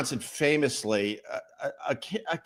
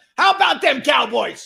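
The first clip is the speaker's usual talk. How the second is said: very high-pitched, loud, raspy shout; 9 semitones higher, 7 dB louder than usual. Doing an impression of the Dallas Cowboys coach. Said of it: "I'm working on my impressions".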